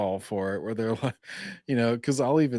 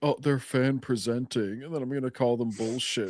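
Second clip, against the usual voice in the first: mock scoffing, scornful, mocking tone; 3 semitones higher than usual. Mocking what another speaker means: mocking another speaker. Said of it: "so he's like".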